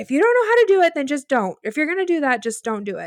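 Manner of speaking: put-on heated, angry scolding tone, voice high. Retelling how a rower turned and yelled at a teammate: imitating someone screaming. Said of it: "turned around and screamed at her".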